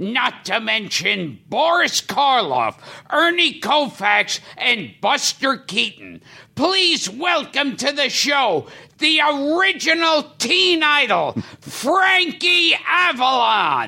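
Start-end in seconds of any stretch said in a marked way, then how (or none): 6.5-13.9 yelling, much higher pitch. A show host introduces the guest, yelling. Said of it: "Why are you yelling?".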